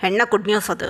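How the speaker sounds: ordinary delivery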